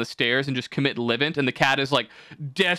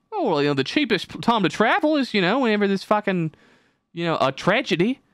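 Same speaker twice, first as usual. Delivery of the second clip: put-on Australian accent, pitched up; 6 semitones higher than usual. Retelling what a British traveler said, in a put-on Australian accent. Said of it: "I don't know why I'm doing an Australian accent".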